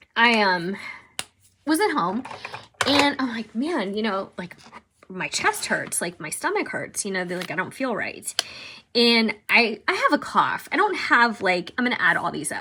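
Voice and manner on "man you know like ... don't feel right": ordinary delivery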